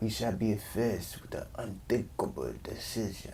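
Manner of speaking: put-on slow, soft Slavic accent.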